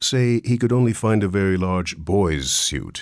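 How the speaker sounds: plain reading voice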